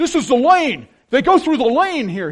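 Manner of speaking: very loud, high-pitched TV analyst call, belted out. Recalling a coach at the chalkboard: John Madden impression. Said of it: "you can remember him with that C B S chalkboard, and he's going".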